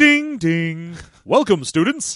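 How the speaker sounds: put-on high school PA announcer voice. Wishing to be hired for tv voice work, the speaker does a high school announcer voice. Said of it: "hire me to be like the announcer in high school".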